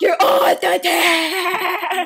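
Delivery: mean, drawn-out, very slow dismissive tone. Retelling how the coach kicked them off the team: imitating a mean coach. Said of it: "the coach is, like, really mean".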